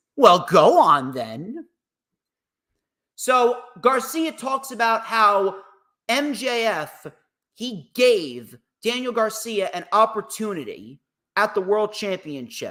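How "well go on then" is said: put-on, sarcastic, cocky voice. Retelling what he said back to someone, imitating a sarcastic, cocky voice. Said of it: "in a very sarcastic and and cocky voice".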